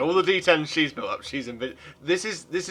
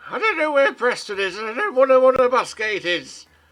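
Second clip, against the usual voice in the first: crone character voice; 10 semitones higher, 7 dB louder than usual. Voicing the crone character in a shared story, in an old crone voice. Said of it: "The crone says".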